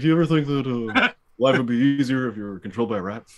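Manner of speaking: loud, weird, odd put-on cartoon bear voice. Retelling an impression done while watching a movie: Yogi Bear voice. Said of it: "a weird Yogi Bear voice".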